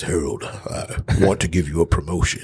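deep, put-on authoritative voice. Retelling being called to his office and quoting him in a real deep voice. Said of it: "he has this real deep voice and he says".

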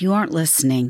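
timid, meek, passive way of speaking. Explaining communication styles, showing what a passive communicator might say: passive communicator tone. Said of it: "A passive communicator might say".

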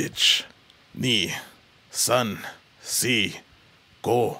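put-on, imitated Japanese accent. Recalling being made to count in Japanese, imitated Japanese accent. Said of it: "And you even do the voice too".

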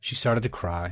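ordinary delivery, nothing marked

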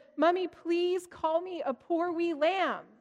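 put-on high, slow, pleading small child voice.

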